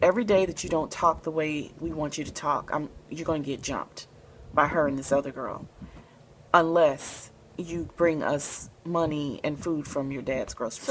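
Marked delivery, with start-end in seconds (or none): none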